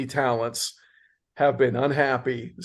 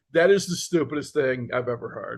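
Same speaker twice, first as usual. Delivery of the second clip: ordinary talk, nothing marked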